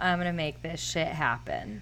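ordinary delivery

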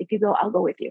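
close, soft, hushed whisper. Retelling a friend's offer from the seat behind: imitating Tracy whispering. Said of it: "and she whispered in my ear".

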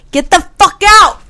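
mock very high, loud, shrieking yell. Retelling how a sister confronted an intruder: imitating someone yelling. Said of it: "just yelled".

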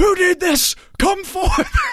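very high, loud screaming. Retelling the dean addressing the whole school in the gym, imitating him screaming. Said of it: "he started screaming like".

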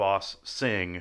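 normal talking voice

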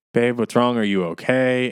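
play-acted loud calling. Retelling being woken by a noise in the kitchen: imitating own calling out from bed. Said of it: "just calling out like".

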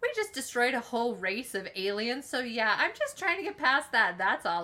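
put-on, dripping with irony, swooping sing-song sarcasm. Retelling a show scene, the speaker voices a character's reply, mock-sarcastic. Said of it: "like really sarcastically".

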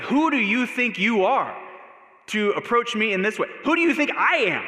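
loud high-pitched yelling. Acting out a possible response in the middle of the night: imitating someone yelling. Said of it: "yelling at her, waking everyone else up".

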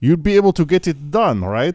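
loose Eastern European accent. Acting out a message about a deadline: sort of Russian accent. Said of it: "And that was sort of Russian".

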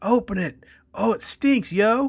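put-on high, loud yelling teen voice.

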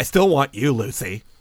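put-on catty queen voice. Quoting a character's line to lucy, in a catty queen voice. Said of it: "it almost sounds like a catty queen".

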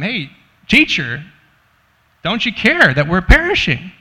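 loud swooping scream. Acting out disciples screaming at their teacher in a storm: imitating a scream. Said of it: "scream at him".

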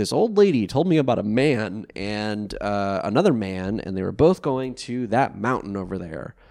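ordinary talk

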